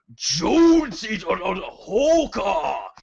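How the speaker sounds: dramatic dub voice, very high, slow, drawn out. Imitating Snake in the Japanese version: dramatic Japanese-dub Snake voice. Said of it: "switch over to Japanese and he's like".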